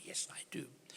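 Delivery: hushed whispered voice.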